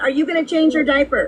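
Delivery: mad, indignant, accusing angry tone. Objecting that she was told to go to AA: angry. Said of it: "you sound angry".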